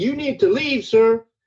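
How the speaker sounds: mock, very high-pitched yelling. Speaker quotes a scene from Rogue Nation: imitating someone yelling. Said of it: "will have somebody yelling".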